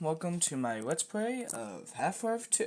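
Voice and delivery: put-on high, nervous young voice.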